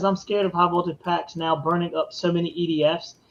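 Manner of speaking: ordinary delivery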